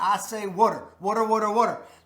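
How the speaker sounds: "water" pronounced with a Baltimore accent. Pointing out own pronunciation of water: Baltimore accent on "water". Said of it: "that's my Baltimore accent".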